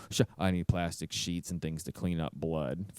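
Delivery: very deep, very soft, flat droning monotone. Describing a film's monster character and acting out his lines, flat monotone voice. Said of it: "because he's like monotone".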